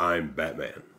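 deep, low-pitched, hushed voice. Showing how to say a line in Batman's voice. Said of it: "they said, like, like that".

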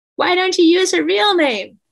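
mock, very high-pitched calling out. Retelling how a woman in the back row called out to the teacher. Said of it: "a woman's voice called out".

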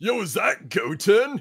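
very high-pitched, very loud put-on surfer-dude voice. Trying out a character voice after another speaker's attempt: Yamcha voice. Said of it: "this is my Yamcha voice. Surfer dude-esque".

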